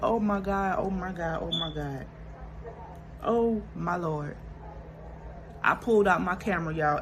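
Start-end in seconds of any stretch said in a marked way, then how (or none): 0.0-4.4 put-on, slow, tearful sobbing through words. Retelling sitting on the tub after crying hard: reenacting own sobbing. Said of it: "I'm just like".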